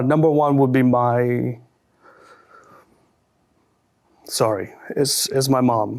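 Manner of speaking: getting emotional, voice catching. Answering a question about personal heroes, getting choked up. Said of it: "sorry, it's emotional".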